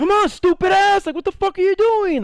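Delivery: put-on, very high, shrill, jeering and insulting shout. Retelling how a group kept screaming at him in the shower, retelling a shout. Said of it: "they're all just shouting".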